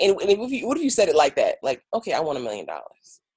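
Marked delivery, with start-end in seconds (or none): 1.9-3.2 lifeless, energy-free delivery, no feeling behind it. Showing a line said without emotion: flat, lifeless delivery. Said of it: "there's no life behind those words".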